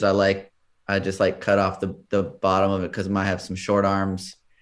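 usual speaking voice

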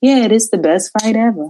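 spaced-out, stoned-sounding delivery. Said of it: "because he smokes so much weed".

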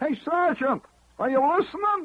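very high, loud, shouted holler. Speaker tells of a guy on a top bunk calling the sergeant; retelling a holler. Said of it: "He hollers".

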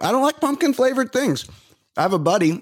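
very high, words pushed through food. Just took a second bite of pumpkin, talking with mouth full. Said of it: "Now I'm chewing".

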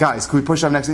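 plain

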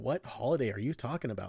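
firm, dead-certain, convinced tone. Retelling own earlier question, imitating saying it with so much conviction. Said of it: "I said that with so much conviction".

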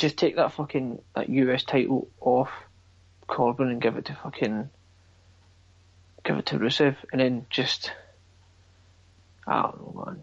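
dejected, downcast, dispirited tone. Talking about Rusev with another speaker, dejected. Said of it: "You sound so dejected right now".

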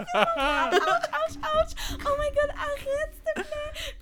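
put-on cries of pain. Retelling how she faked a calf cramp to get out of it, faking cramp pain. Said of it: "j'ai sorti mes grands talents d'actrice j'étais comme ouch ouch".

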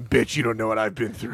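low, hard-bitten, totally unbothered drinker voice. Joking about what the unfazed baby thinks: voicing the baby as a tough drinker. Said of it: "She's sitting there with a bottle with whiskey and going".

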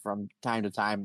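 ordinary delivery

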